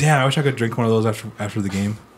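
ordinary talk

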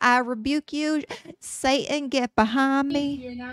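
very slow, put-on southern accent. Imitating how his mom would react, in a put-on southern accent. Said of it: "She doesn't have a southern accent. I don't know why I gave her that".

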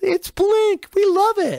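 put-on very high-pitched girl's voice. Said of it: "the girl in the car goes".

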